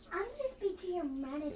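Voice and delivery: entitled, demanding, complaining woman voice. Doing a Karen impression after the hotel manager is mentioned: Karen impression. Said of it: "A Karen impression".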